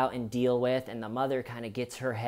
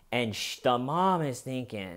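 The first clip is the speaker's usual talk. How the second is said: plain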